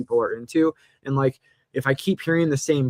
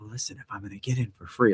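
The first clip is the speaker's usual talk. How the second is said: hushed, quiet half-whisper; 4 semitones lower, 6 dB quieter than usual. Retelling how the other speaker talked about getting in free: imitating someone half-whispering. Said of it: "Was I whispering?".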